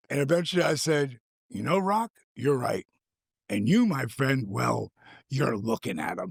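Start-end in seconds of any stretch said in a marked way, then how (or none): 1.5-6.3 unamused, matter-of-fact, deadpan delivery. Retelling own reply to The Rock: retelling a deadpan reply. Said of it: "I just deadpanned him".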